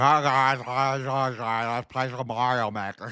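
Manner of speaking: muffled, high, slow speech blurred by a full mouth. Retelling streaming games with a mouth full: imitating talking with cotton in mouth. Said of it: "with, like, cotton in my mouth".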